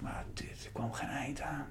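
soft, breathless, exhausted whisper.

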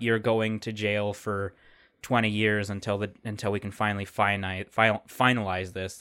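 usual speaking voice

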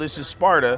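ordinary delivery

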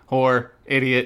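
acted, very bored, flat delivery. Acting out a costumed character insulting people: acting really bored. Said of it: "really bored".

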